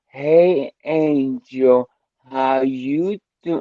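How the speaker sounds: very slow, high, condescending drawl. Imitating how she spoke down to the speaker, mock-condescending greeting. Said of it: "it was condescending".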